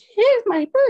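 put-on very high, loud, squeaky little cartoon boy voice. Speaker quotes a Simpsons moment the birthday remark reminded him of: Ralph Wiggum voice. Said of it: "Ralph Wiggum from The Simpsons, where he's like".

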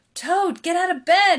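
very loud pleading. Narrating Frog speaking to Toad, who is in bed: pleading. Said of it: "he pleaded".

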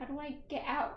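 plain

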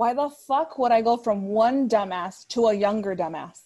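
loud, heated, worked-up rant. Recounting a bullshit accusation against her, getting heated. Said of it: "I'm getting heated now just talking about it".

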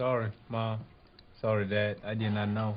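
sad, downcast tone. Apologizing to mom and dad for bringing the guests: sad apology. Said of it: "look, he's sad".

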